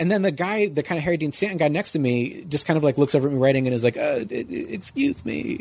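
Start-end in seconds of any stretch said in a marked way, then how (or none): 4.0-5.6 whispered, bad Eastern European accent. Retelling what the man seated next to them said, bad Eastern European accent. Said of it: "I'm not doing a good accent, ... like an Eastern European accent".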